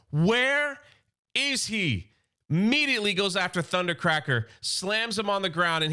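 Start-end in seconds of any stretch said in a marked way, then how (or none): 0.1-2.1 high-pitched, frantic screaming. Retelling a comic scene where Astro Train attacks: imitating a scream. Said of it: "he's screaming".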